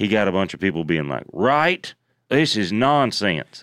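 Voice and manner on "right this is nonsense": thick, slow, heavy southern drawl. Retelling how commenters reacted to a post, in a deeper southern accent. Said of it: "I put him in a deeper southern accent".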